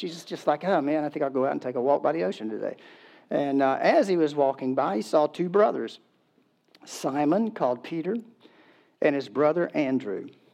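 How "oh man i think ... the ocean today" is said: fast, offhand, nonchalant musing tone. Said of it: "it sounds so nonchalant".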